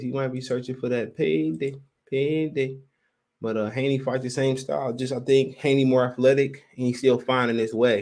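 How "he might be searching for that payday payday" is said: put-on, laid-on heavy Mexican accent. Discussing a fight, switching to a Canelo voice: Canelo voice, Mexican accent. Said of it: "In my Canelo voice".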